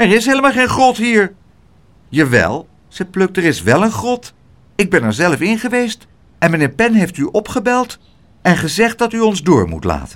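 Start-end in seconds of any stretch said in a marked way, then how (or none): 0.0-1.3 jittery, nervous, high little calling out. Narrator reads the little doorman answering Pluk, calling out nervously. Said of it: "Riep het portiertje zenuwachtig".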